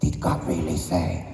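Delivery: put-on spooky, scary voice. Imitating the tempting voice asking whether God really said it, scary put-on voice. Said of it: "제가 좀 목소리를 흉내를 내볼게요 ... 약간 스케리하죠".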